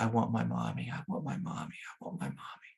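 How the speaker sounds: weeping, sobbing, pleading voice. Retelling a shell-shocked soldier in a movie: imitating someone crying. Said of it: "just crying, like".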